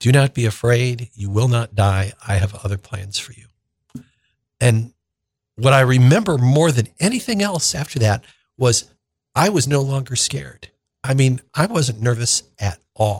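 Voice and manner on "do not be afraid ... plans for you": very soft, hushed, gentle, solemn, grave voice. Speaker recounts what a voice told them, in a very soft, solemn voice. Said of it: "very soft, solemn voice".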